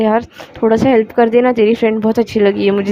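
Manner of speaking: ordinary talk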